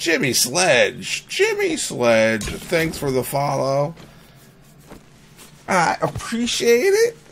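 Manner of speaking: swooping, emotional voice, cracking and breaking. A streamer thanks a viewer for following, voice cracking with emotion. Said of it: "you're making me my voice crack".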